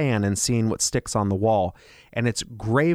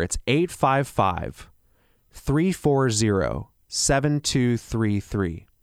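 speaking slightly more slowly. A speaker in an ad repeats his phone number, a little slower. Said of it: "I'll say that a little slower".

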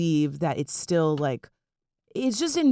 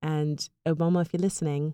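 mock English accent impression. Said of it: "Would you like to do an English accent instead".

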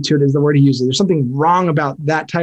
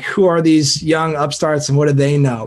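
ordinary talk, nothing marked

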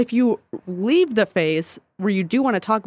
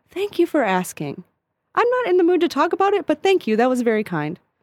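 high, polished, best theater voice. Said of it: "put on my best podcast voice, my best theater voice".

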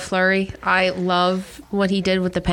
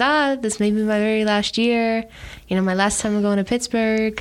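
clumsy, very poor fake French accent; 2 semitones higher than usual. Quoting him hinting at his last season, in a very poor french accent. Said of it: "My very poor French impression".

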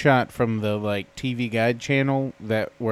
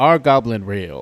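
odd, loud, weird narrator-style voice; 3 semitones lower, 6 dB louder than usual. Quoting a guy in a video, doing the weird TikTok voice. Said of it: "in that weird TikTok voice, the guy goes".

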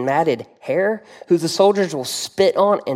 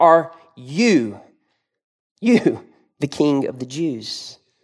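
sarcastic, scoffing disbelief, heavy stress on you; 3 semitones lower than usual. Acting out Pilate questioning Jesus at the trial: imitating Pilate's sarcastic stress on YOU. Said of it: "asking this question somewhat sarcastically, and it's emphatic".

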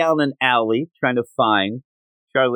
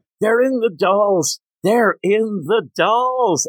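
acted-out high, repeated yelling in character voice; 8 semitones higher than usual. Speaker recounts a scene where a man realizes he is dead, retelling a character's yell. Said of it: "and then he starts yelling".

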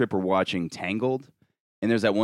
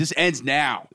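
acted, high, raised, hollering yell; 6 semitones higher than usual. Retelling a bad trip, yelling at a friend again: imitating own past yelling. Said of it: "And I'm literally yelling at him".

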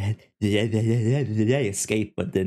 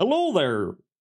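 high, pitched-up bad cartoon alien voice; 8 semitones higher than usual. Acting out a line the time-travelling alien says: failed Zoidberg impression. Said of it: "I can't do a Z-, Zoidberg".

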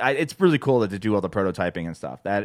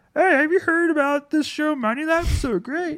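very high cartoon frog puppet voice. Asking listeners to tell friends about the show, in a Kermit the Frog voice. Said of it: "I'm Kermit the Frog".

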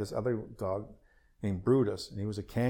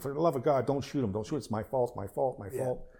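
urgent, frantic pleading cry, held back, like a scream; 3 semitones higher than usual. Retelling a dog attack, telling men with rifles not to shoot: retelling a scream. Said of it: "and I'm screaming".

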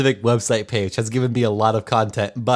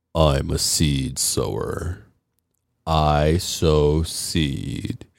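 very deep, very low, slow manly voice; 8 semitones lower than usual. Recalling a performer's surprise opening from behind the crowd: deep, manly voice. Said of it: "he goes in his deep, deep, manly voice".

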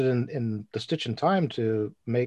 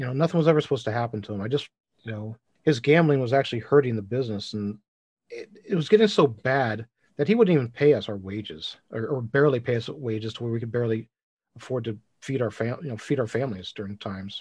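ordinary talk

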